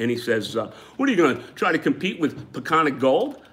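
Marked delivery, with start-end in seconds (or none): 1.0-3.3 high, snide, lightly sarcastic, doubting tone. Retelling what a possible funder asked: imitating a sarcastic remark. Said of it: "He's kind of being a little sarcastic to me".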